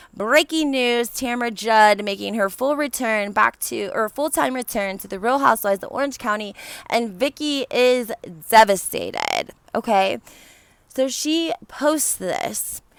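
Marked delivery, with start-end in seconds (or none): none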